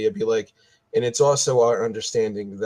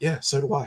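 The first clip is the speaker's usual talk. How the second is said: hushed, half-whispered voice; 4 semitones higher, 4 dB quieter than usual. Half-whispering back in character to another player's remark about fleas: half-whispering back in character. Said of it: "I'll whisper back to him".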